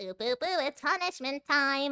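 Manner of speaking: half-hearted character voice, high and loud. Before saying goodnight, showing a usual take on the character: half-assed Monokuma voice. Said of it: "I usually just do like a little half-ass".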